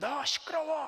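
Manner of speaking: furious shouting. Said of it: "막 소리를 지르는데".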